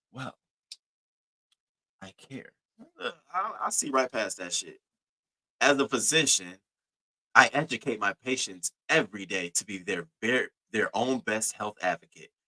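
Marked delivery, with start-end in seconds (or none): 0.1-2.5 mocking prim, coy voice, quieter. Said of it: "That tone that you have now sounds a lot different".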